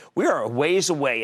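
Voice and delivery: ordinary talk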